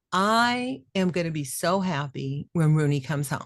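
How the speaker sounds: normal talking voice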